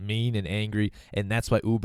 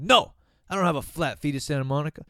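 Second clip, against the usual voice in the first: mock, high, short yelled cab driver voice; 6 semitones higher than usual. Retelling how a cab driver answered a question: imitating a cabbie yelling. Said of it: "And he yelled at me".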